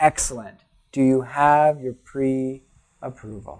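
said slowly and drawn out. Retelling his reply to people eager to buy a cheap house, slow and drawn out. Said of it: "Do you say it slow like that?".

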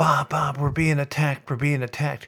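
put-on frantic, urgent, alarmed yelling. Retelling his mother's middle-of-the-night phone call: imitating mom yelling. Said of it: "And she's yelling".

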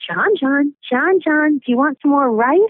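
put-on eerie, creepy babyish voice. Retelling how she offered John more rice, in a creepy baby voice. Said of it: "in this really creepy baby voice".

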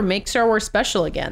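ordinary talk, nothing marked

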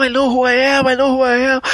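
put-on crying, high, words choked up. Recounting the ending of a movie, imitating the actor crying. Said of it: "na hora que ele começa a chorar lá e falar não".

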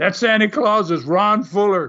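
mild, light mock screamed protest. Speaker retelling how two people screamed out right away, retelling a scream. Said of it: "they both screamed right away".

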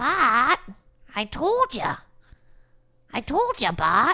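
swooping, animated cartoon mom voice. Trading cartoon voices with a friend, the speaker tries a cartoon mom impression. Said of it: "Is that close?".

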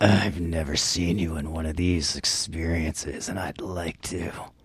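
put-on creepy, eerie, unsettling voice. Showing how a line sounds if said in a creepy put-on voice. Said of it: "If you did that in a creepy voice".

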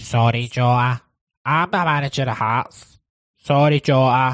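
talking through the nose. Doing an impression of the Hearts manager apologising to Jota: Stephen Naismith impression. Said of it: "here's my impression of, uh, Stephen Naismith".

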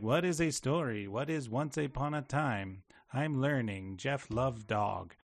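robot voice, later-stage learning robot. Describing how the robot talks by the end: imitating the robot's later speech. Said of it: "by the end, he's like".

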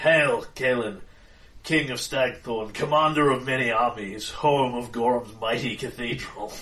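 distant, echoey, loud, brisk commanding voice. Storyteller voicing a figure hailing King Kaelin, in an echoey, commanding voice. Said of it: "in this echoey voice that sounds... like it is coming from far away, and it has that air of command".

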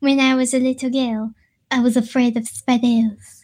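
put-on French accent. Asked to do the line again, repeating it in a put-on french accent. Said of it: "Do it again".

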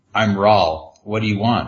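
ordinary talk

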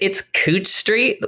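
very sassy tone. Retelling a woman's reply on a phone call about a house, imitating a sassy woman. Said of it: "very sassy".

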